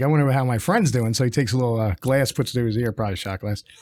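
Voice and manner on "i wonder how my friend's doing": ordinary delivery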